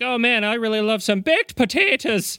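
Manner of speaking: high-pitched fake Irish accent. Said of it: "saying that like that".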